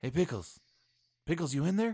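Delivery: whispering. Whispering through a door so as not to draw attention: whispering. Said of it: "I'll just whisper in through the".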